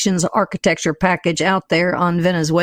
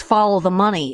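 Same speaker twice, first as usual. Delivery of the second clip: ordinary delivery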